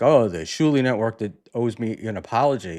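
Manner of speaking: normal talking voice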